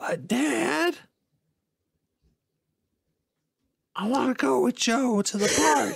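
put-on, very high-pitched, breathy cartoon voice. Trying out a more breathy voice, a line in breathy Family Guy voice. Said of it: "Let me see if I can do a more breathy voice".

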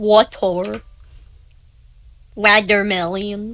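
pronunciation imitated in a mocking way. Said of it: "You're not making fun? Oh, I am".

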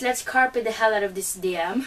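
ordinary talk, nothing marked

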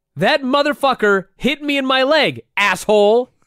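very high-pitched, slow, drawn-out scream. Retelling how a wrestler answered a heckling fan: imitating Sid screaming. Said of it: "and he screams".

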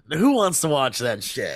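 ordinary talk, nothing marked

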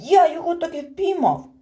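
loud, high, triumphant, victorious exclamation. Narrator reads a character's shout as everyone silently studies the catch: triumphant exclamation. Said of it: "переможно вигукнув".

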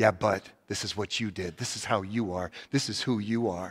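low, quiet devil voice. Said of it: "when he's whispering in your ear".

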